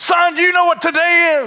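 very high, electric, fired-up, amped-up dad voice. Retelling how their dad would come in, imitating dad amped up. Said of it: "all amped up".

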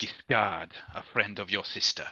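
speaking low, hushed voice. A character introduces himself as a friend of the sister: lowered voice. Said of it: "he lowers his voice conspicuously".

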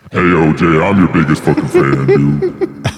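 put-on low demonic voice. Acting out a fan greeting O.J.: put-on Satan voice.

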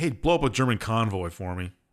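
normal talking voice

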